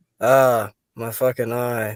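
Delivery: flat, lifeless, low-energy, dull low monotone. Imagining how Daniel would say the line, Daniel's flat dull voice. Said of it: "in that like that dull voice".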